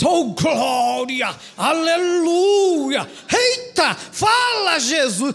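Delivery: affected, very slow, put-on pious churchy voice. Imitating a spiritual believer's exclamations, put-on pious believer voice. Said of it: "é uma impostaçãozinha de voz".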